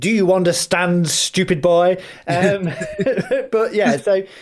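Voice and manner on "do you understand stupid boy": jokingly put-on condescending, patronizing tone. After admitting he sounded condescending, he repeats the question, mock-patronizing. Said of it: "sound as patronizing as it did".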